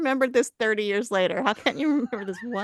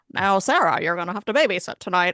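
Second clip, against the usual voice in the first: put-on, weird mid-Atlantic accent; 3 semitones lower than usual. Imitating how her parents used to talk: weird mid-Atlantic accent. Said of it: "that like weird mid-Atlantic accent".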